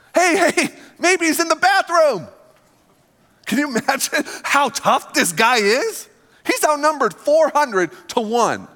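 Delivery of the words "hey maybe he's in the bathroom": high, mocking, jeering, needling taunt. Retelling Elijah mocking 400 prophets at the altar: acting out Elijah's mocking. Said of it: "Elijah's just off to the other side mocking them".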